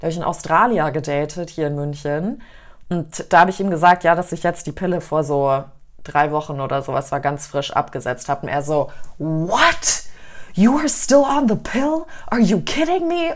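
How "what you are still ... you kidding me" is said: play-acted, freaked-out, high, drawn-out incredulous outburst. Recounting how a man she dated reacted to her news: mock freaked-out disbelief. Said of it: "der völlig ausgeflippt".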